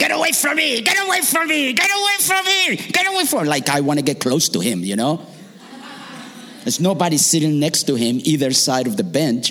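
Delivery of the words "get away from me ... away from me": very high, shrill, repeated screaming. Retelling how an old man on a bench screamed at them: imitating someone screaming. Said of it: "he starts screaming at me".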